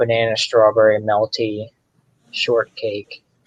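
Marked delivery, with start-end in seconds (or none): none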